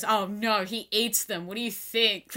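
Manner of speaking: heavy, slow, dry, drawn-out sarcasm. Retelling Hannibal's answer to Jackie's question at dinner, mock-sarcastic as Hannibal. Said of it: "And Hannibal sarcastically goes".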